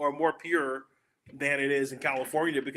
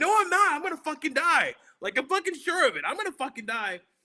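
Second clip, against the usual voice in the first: mock, very high-pitched panicked freak-out; 13 semitones higher than usual. Retelling a bad reaction to weed, the speaker replays their past self: reenacting own panic. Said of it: "I freak out at".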